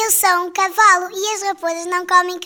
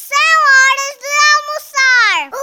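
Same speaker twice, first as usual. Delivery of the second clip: high, eager, shouted delivery; 7 semitones higher, 4 dB louder than usual. Licking its lips at an appetizing-looking sheep, the character calls out: shouted. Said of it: "Lambeu os lábios e gritou".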